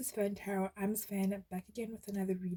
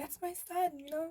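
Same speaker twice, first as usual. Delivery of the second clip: play-acted, very high screaming cheer; 8 semitones higher than usual. Acting out a mom cheering at her son's game: imitating a screaming cheer.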